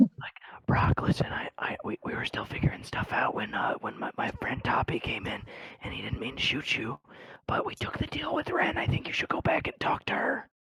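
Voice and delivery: hushed whisper, close range, pleading tone. A player's character, on the ground close to brock, speaks to him; whispering. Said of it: "I'm gonna whisper to him and be like".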